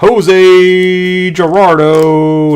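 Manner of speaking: loud soccer commentator voice, name drawn out long. Announcing a bonus autograph from a card case; soccer announcer voice. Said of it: "Give me my soccer announcer voice".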